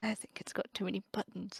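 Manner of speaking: muttering bitterly under breath. Acting out a scene of being ignored by others, bitter mutter under breath. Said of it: "very bitterly mutter under my breath".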